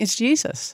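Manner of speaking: emotional, choked-up voice catching. Describing the afterword of a book about life's great romance, getting choked up. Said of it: "I'm gonna get choked up".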